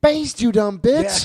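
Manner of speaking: very high-pitched, shrill, loud screaming. Retelling watching cooking shows at home: imitating own screaming at the tv. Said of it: "I'm just sitting there screaming at the T V".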